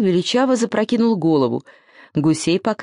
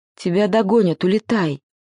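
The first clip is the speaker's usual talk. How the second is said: ordinary delivery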